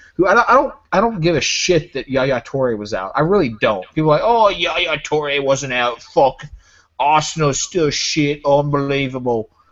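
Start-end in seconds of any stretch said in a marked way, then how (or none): 4.2-9.5 put-on Midlands accent, slower. Mocking what people say after his team's win, in a Midlands accent. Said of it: "What kind of accent was that?".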